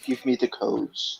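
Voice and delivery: whispered, slow, breathy, drawn-out delivery. Quoting a favourite film villain's line: Hans Gruber voice. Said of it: "Just the way he says it".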